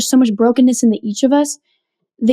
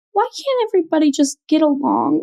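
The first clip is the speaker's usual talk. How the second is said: play-acted crying through every word, high; 5 semitones higher, 4 dB quieter than usual. Retelling what a crying eighth grader said at camp: imitating someone sobbing. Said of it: "And she's sobbing".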